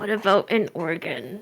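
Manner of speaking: husky, raspy, hoarse voice, very low, slow. Voicing a character's joke reply during a game: hoarse voice. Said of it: "Sven in a hoarse voice is gonna be like".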